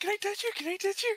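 put-on very high, eager, excited little kid voice, rushed. Voicing a character who asks, like a bubble-blowing kid, to touch her: excited little kid voice. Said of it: "in that voice".

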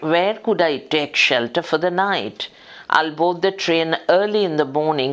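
ordinary delivery

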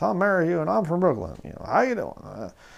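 put-on slurred drunk speech. Retelling how a drunk man introduced himself, imitating his drunk slurred speech. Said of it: "drunk out of his mind, slurred speech".

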